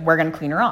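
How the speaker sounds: ordinary talk, nothing marked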